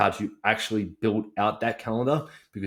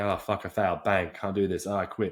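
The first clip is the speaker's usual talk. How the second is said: put-on defeated tone. Showing listeners what to avoid: acting out negative self-talk. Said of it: "We don't wanna go negative".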